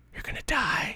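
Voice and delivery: hushed, quiet, breathy whisper under the breath. Retelling taking turns at a video game with a brother: imitating a quiet whisper. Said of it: "quietly whispering".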